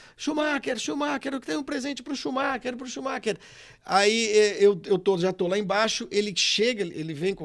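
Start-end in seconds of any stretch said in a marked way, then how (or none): 0.2-3.4 mock wild, frantic madman yelling, pitched high. Retelling how a man yelled from the back of the auditorium: imitating someone shouting like a madman. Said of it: "o do Vesgo começa a gritar, feito um louco".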